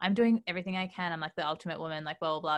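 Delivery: ordinary talk, nothing marked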